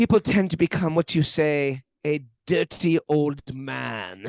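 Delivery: put-on German-accented speech. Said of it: "in that German accent".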